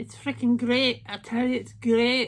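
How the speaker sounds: poor put-on Scottish brogue. Praising a makeup palette, bad scottish accent. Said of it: "That's my bad Scottish accent".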